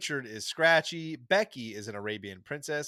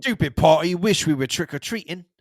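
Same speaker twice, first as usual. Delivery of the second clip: booming, very loud, put-on British accent; 4 semitones higher, 11 dB louder than usual. Recounting a cartoon Halloween party scene, quoting Bart in a British accent. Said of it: "it's Bart in a British accent".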